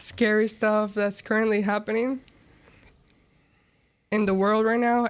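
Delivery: fighting tears, voice held back. Trying to contain emotion before going on with the discussion, holding back tears. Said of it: "I'm just very trying not to cry".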